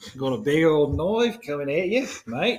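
put-on Australian accent. Chatting about the Australian film The Babadook: mock Australian accent. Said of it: "Straight from the down under".

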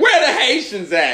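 hyped, loud, very high stage-comic crowd call-out. Imitating a new york comic performing in boston: imitating a new york urban comic. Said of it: "they're like".

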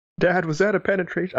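put-on very high, squeaky, quick small child voice. Asked to repeat a joke in their little kid voice. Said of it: "can you say that in your little kid voice?".

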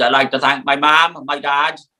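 exaggerated thick Welsh accent. Recalling an infamous Brits speech, imitating Kelly's very Welsh accent. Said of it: "Kelly in his very Welsh accent".

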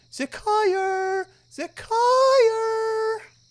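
very high, lovely, tiny gnome lady voice. The narrator voices the mother calling out as she gets closer, in a tiny gnomish lady voice. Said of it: "the loveliest voice of a tiny gnomish lady".

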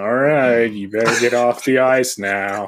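level, unvarying, flat one-note monotone delivery. Imitating an actor who plays the same character in everything: Brian Posehn monotone voice. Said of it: "monotone kind of voice".

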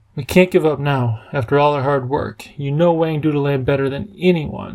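ordinary delivery

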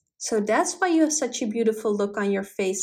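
ordinary delivery, nothing marked

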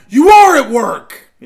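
shrill, very loud, high-pitched shouting. Scolding someone for keeping his phone on, the speaker is yelling. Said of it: "Sorry, I didn't mean to yell".

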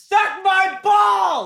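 shrieking, very high, loud scream. Retelling what they screamed from their room: imitating own scream. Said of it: "I scream".

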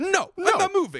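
shouting. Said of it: "and yells at her".

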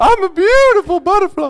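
put-on very high, very loud, belted German accent. Speaker describing a film to listeners, Bug's Life German caterpillar voice. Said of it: "He speaks like this".

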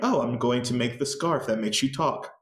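normal talking voice

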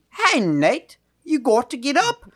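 put-on British woman's accent. Speaker retells a woman waking him up, british woman accent. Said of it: "she did it like a British woman".

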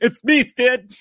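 very high, loud, dopey cartoon voice. A speaker repeats a quoted line for laughs in a doofy voice. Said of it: "Doofy voice".

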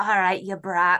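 put-on Scottish accent. Quoting a character's line, in a Scottish accent. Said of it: "Scottish accent is like my favorite accent".

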